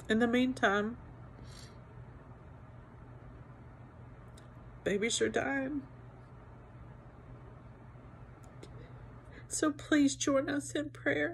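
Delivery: very soft, quiet, overcome with emotion. Recording a video asking viewers to join in prayer, emotional. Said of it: "I'm emotional".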